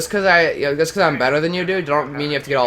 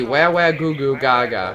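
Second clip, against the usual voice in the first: whiny, babyish fake wailing, crying and babble. Answering another player's taunt of little baby: mock baby crying. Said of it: "I'm a little baby".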